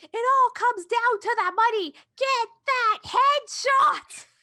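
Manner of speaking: very high-pitched, shrill, angry hollering. Describing a man yelling at club members, imitating someone yelling. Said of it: "he's like yelling at them".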